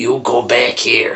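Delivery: mock yelling in a mean, smoky-voiced woman's voice. Describing a TV show's mean lady who yells at moms: imitating her yelling. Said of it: "Who sounds like she smokes all the time".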